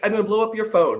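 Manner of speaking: ordinary talk, nothing marked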